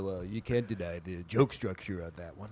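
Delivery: deep, very low, dropped-down stand-up comedian voice. Mocking comics who defend a joke's structure: Sam Morril impression. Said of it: "Pretty good impression there".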